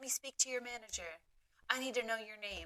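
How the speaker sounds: irate, pissed-off, demanding angry tone. Retelling a complaint call from an upset customer: imitating an angry customer. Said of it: "she was pissed and she was like".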